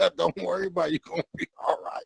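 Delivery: put-on laughing while talking. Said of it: "I started laughing and shit".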